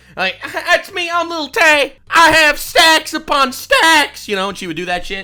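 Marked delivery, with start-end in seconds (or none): 0.4-4.3 put-on hard boastful swagger, like a showing-off kid. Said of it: "she would talk like she's coming out of".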